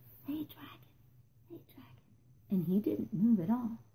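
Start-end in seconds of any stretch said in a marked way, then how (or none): 0.2-2.4 very hushed, barely audible soft whisper. Elizabeth tries to wake the sleeping dragon, whispered very softly. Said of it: "Elizabeth whispered very softly".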